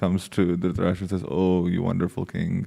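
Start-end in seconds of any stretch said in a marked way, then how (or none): 1.3-2.7 mock dripping, very sarcastic, overdone tone. Retelling a visitor's greeting to a king: imitating a sarcastic tone. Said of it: "in a very sarcastic way".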